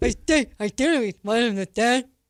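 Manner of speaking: acted-out feeble, weak, ill-sounding voice. Giving another speaker's answer back to him, imitating a sick voice. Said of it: "She's making fun of my sick voice".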